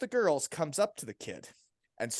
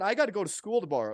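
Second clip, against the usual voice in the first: mock tearful crying, young teen voice; 3 semitones higher than usual. Retelling what a beaten kid said while crying: imitating a crying kid.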